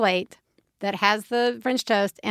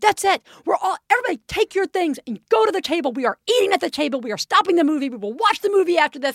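mock out-of-control, shrill, high-pitched outburst; 7 semitones higher than usual. Recounting when the food hit the floor, acting out own shrill yelling. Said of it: "literally shrill".

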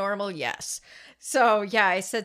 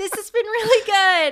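voice going up, higher and louder; 10 semitones higher, 7 dB louder than usual. Retelling thanking her after the reading, voice going up. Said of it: "My voice goes up here".

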